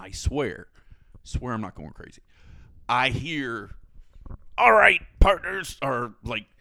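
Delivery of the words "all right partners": put-on pirate voice, higher and louder. Retelling what a loudspeaker played at dawn: imitating a pirate voice. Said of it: "I can't do a pirate voice".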